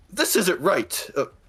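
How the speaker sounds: calling out. A game narrator voices a young steward by the staircase: crying out. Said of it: "he cries out".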